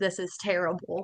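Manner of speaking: put-on tearful, crying voice. Retelling a brother's calls home from jail: imitating someone crying. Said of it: "call my mom and dad crying".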